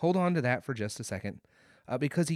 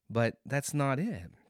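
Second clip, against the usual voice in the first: normal talking voice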